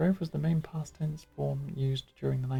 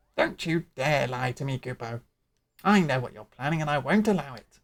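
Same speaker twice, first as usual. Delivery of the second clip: loud, croaky, small fairy character voice; 6 dB louder than usual. Voicing a Moogle's lines aloud, in a little croaky fairy voice. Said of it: "little croaky fairy voice".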